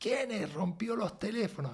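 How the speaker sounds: angry shouting, pitched high. Retelling how a boss yelled across the room: imitating a boss yelling. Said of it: "Empieza a gritar de punta a punta".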